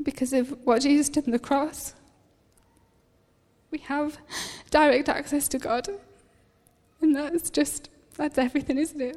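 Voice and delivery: crying while speaking. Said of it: "I don't know why I'm crying".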